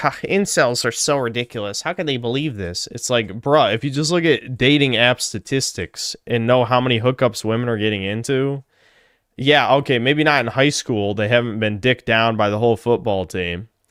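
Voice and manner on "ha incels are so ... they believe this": scornful, derisive mockery through a laugh. Imitating a viewer who laughs at the video: imitating a mocking laughing viewer. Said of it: "this normie who's laughing".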